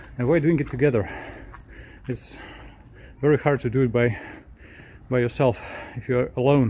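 panting, out of breath, winded. Working on a car's exhaust pipes, panting, out of breath. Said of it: "I'm panting like crazy already".

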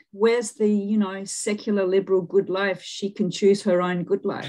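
ordinary talk

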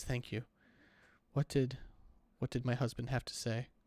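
tearful speech through crying. Game master voicing a woman handed the baby, thanking them and asking about her husband: crying. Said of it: "She's just crying".

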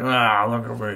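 loud, angry character voice. Voicing the angry Geodude on a card: voicing an angry Geodude. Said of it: "look, he's all, like, angry and stuff".

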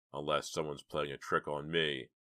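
plain

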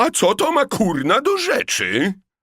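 very high-pitched, bristling, offended, indignant tone. A woman, asked by the director about a guest's age, bristles; indignant. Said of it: "Obruszyła się".

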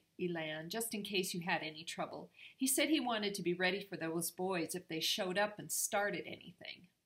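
ordinary talk

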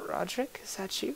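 very frail, breathy, weak, weary near-whisper. Narrator voicing an unseen figure calling out once the snoring stops: very frail, tired voice. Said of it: "a very frail voice, very tired voice".

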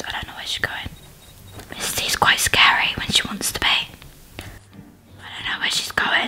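quiet whispering. Streamer unsure where the teacher character went, whispering. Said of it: "I'm whispering".

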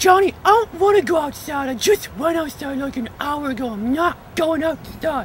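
very high, put-on talking-dog voice. Coming home from school, answering as the dog in a put-on dog voice. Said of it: "It's dog voice".

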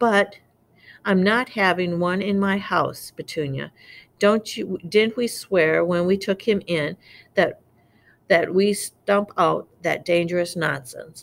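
plain reading voice

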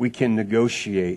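very soft, gentle, mild, hushed murmur. Storyteller voicing a bear that speaks to a hunter: very soft voice. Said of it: "The bear said in a very soft voice".

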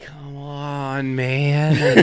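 "on" in "come on" drawn out, stretched. Reacting while watching an episode together: Joe Biden voice. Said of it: "My best Joe Biden voice".

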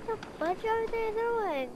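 startled, high, shrieking yell.

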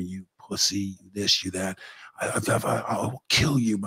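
put-on growing anger. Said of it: "he starts getting a little louder".

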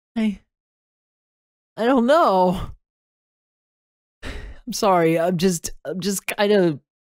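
fighting back tears. Talking to his audience, near tears. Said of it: "I want to cry right now".

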